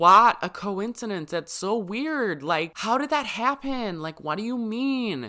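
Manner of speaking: horrible fake American accent, pitched very high. Voicing confused parents questioning the producers, in a bad American accent. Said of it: "My American accent is absolutely horrible".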